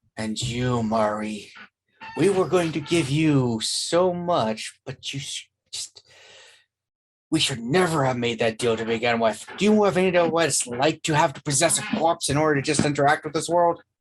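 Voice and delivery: eerie, ghastly, spectral ghost voice. Game narrator voicing a spirit possessing a corpse, addressing a player character, ghastly ghostly voice. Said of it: "ghastly, ghostly voice from the one with the porcelain mask".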